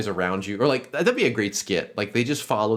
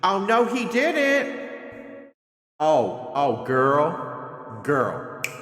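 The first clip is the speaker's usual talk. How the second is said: put-on sassy girl voice, pitched up; 7 semitones higher than usual. Riffing on backup girls in girl posses, in a mock-sassy girl voice. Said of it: "I don't know why I got so sassy".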